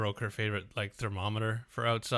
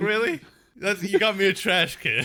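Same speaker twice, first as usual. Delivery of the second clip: put-on old lady voice, high and loud; 9 semitones higher, 6 dB louder than usual.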